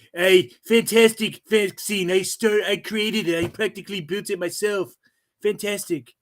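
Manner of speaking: high, bragging politician voice. Speaker criticising Trump's record, slipping into a Trump impression. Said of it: "a damn good Trump impression".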